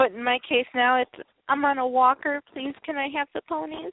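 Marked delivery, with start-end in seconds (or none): 1.5-3.9 mock pitiful pleading. Retelling asking staff for more, imitating own pitiful begging. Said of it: "if you do it in that voice".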